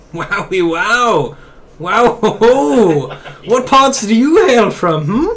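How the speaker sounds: very slow, high, loud, grand, drawn-out showy foppish voice. Voicing a fancy fellow strutting off in a parading fashion: Baltier, parading fancy fellow. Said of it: "goes strutting off in this parading fashion".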